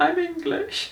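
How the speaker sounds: small, timid, very high little voice. Retelling a reply to a cyclist who shouted, little voice. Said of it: "in this little voice".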